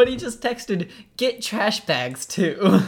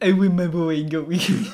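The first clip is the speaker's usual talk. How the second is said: put-on French accent in a child's manner; 3 semitones lower than usual. Recalling the funniest things said, imitating a little kid's fake french accent. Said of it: "Just a little kid trying to be French".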